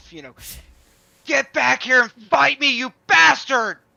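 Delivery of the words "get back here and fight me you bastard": shrill, very loud, high scream. A chained character in the other stall tries to get the chains off, screaming in character. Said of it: "like I'm just I'm I'm screaming".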